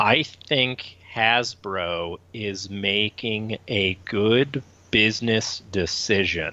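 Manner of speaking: very slow, deliberate, word-by-word delivery. Speaker stating a view so every listener hears it, very slowly. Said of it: "I'm going to say this very slowly".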